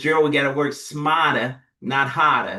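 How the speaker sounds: put-on Boston accent. Telling the audience what Deborah, a friend from Boston, says, quote her in a Boston accent. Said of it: "with a Boston accent".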